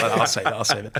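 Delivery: normal talking voice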